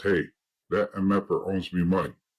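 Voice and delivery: ordinary talk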